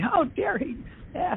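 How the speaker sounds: high-pitched whispered aside. Retelling what the mother said about her father: imitating a whisper. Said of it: "she'd whisper to me".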